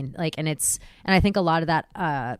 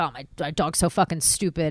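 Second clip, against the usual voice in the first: careless, mean, mocking voice talking down. Imitating people who are mean to their dogs: imitating a mean dog owner. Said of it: "people are mean to their dogs".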